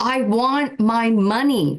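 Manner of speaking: put-on acted child's scream. Recalling being eight in a mall in Tampa, retelling a child's scream. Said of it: "I started screaming".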